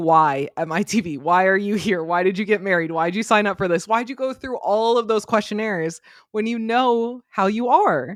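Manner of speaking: ordinary delivery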